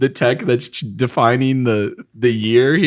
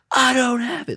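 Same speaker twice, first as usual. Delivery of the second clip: play-acted, very high-pitched yelling; 12 semitones higher, 4 dB quieter than usual. Retelling a woman's reply to a man demanding his pipe back: imitating someone yelling. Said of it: "like, yelling at it".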